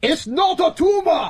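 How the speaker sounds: very high put-on voice. Showing off an impression the speaker says they do: Arnold Schwarzenegger voice. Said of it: "I actually do a a um a um a a, uh, a great Arnold Schwarzenegger".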